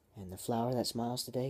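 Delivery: ordinary delivery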